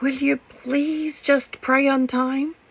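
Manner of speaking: high, begging, imploring pleading tone. Showing a tone not used for saying it's time to pray: pleading. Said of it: "in a pleading tone".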